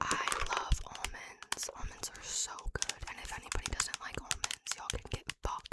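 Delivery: ASMR-style whisper.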